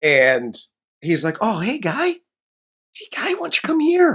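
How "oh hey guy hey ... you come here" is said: very high-pitched, pet-talk style voice. Retelling how a biologist greets a snake creature: imitating talking to a puppy. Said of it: "Like he's talking to a fucking puppy".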